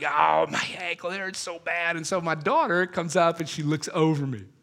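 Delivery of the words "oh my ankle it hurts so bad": put-on pained, groaning moan. Retelling lying on the ground writhing after an ankle injury: retelling groaning in pain. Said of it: "I'm laying on the ground, I'm writhing".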